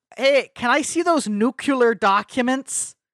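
put-on thick Midwestern Minnesota accent, strong and drawn out. Imagining a dude from the Midwest speaking, in a strong Minnesota accent. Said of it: "a dude from like the Midwest who has like a really like Minnesota accent".

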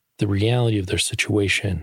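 ordinary delivery

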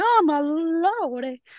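play-acted very high scandalized cry, long drawn "lordy". Retelling how characters in a book react to graffiti: imitating people freaking out. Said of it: "like, freaking out".

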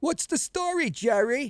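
very high, thick New York slob voice. Recalling a 1970s bit, the speaker voices the working-class slob in a heavy New York accent. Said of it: "this heavy New York accent would say".

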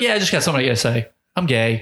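play-acted breezy, offhand, matter-of-fact nonchalant delivery. Imitating Carl Nassib's video announcement: imitating Carl Nassib, nonchalant. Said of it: "he was just so nonchalant about it".

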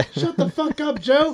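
play-acted, shrill, very high-pitched yelling. Retelling what was yelled down from the ladder: retelling a yell. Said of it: "I was yelling at him".

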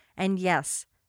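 plain reading voice

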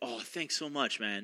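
slow, drawn-out put-on British accent. Retelling how a friend from essex thanked him: imitating a british accent. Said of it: "in a British accent".

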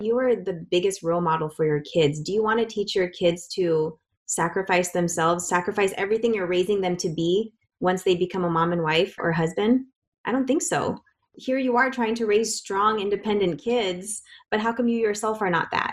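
plain

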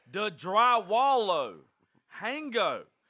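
very loud, slow, deliberate broken pidgin English. Retelling how grandpa answers people who don't understand him: imitating grandpa's louder English. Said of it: "My granddaddy just speaks English louder".

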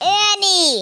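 shouting with excitement. Telling another speaker about raising money, excited yelling. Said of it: "I want you to quit yelling".

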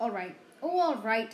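loud, sharply snapped-out reply. Narrator reads Ron biting his lip, then answering Harry: snapped. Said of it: "he snapped".

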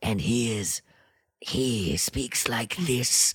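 very airy, soft, raspy drawl. Showing how he sounds when heard from downstairs: very airy, raspy voice. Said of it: "very airy and raspy".

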